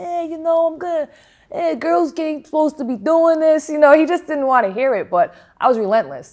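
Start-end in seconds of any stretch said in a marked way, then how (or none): 0.0-3.7 put-on broad, thick New England accent, laid on, pitched up. Quoting a boxer brushing off the speaker's requests, imitating his New England accent. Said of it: "in his very New England accent".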